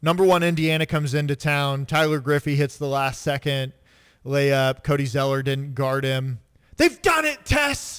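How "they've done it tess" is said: mock thrilled, high, excited broadcaster voice. Retelling a broadcaster's call of a last-second winning layup: imitating an excited game call. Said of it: "That was the call".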